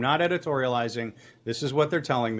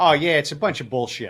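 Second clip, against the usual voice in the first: put-on Chicago accent; 3 dB louder than usual. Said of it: "that was a really good voice that you did".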